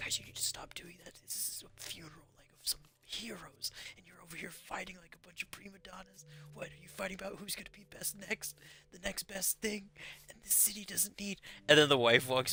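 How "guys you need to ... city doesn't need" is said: very hushed whisper-yell, pitched up. Retelling a movie scene where Michael Keaton scolds fighters at a funeral: imitating a whisper yell. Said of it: "whisper yelling".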